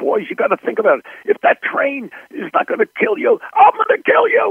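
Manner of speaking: put-on, very high-pitched, mild half-scream. Retelling yelling at the boys on the train set: imitating own screaming. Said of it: "I started screaming at them like this".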